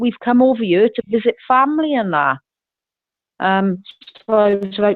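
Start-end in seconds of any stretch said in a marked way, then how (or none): 0.0-2.4 put-on plain American accent. Retelling what a man said to them, in an American accent. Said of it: "in his American accent".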